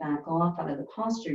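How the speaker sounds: ordinary talk, nothing marked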